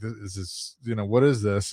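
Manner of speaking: put-on freaked-out, panicked voice. Retelling the moment a parent shared strange news: retelling own freaked-out question. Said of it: "I'm freaking out".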